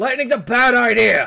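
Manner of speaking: loud shouting, pitched high.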